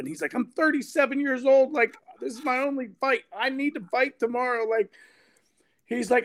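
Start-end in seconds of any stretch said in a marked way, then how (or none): 0.3-4.7 play-acted, wound-up, agitated voice, pitched high. Speaker retells a fighter hearing his opponent isn't coming: imitating a worked-up man. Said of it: "He's like getting all worked up".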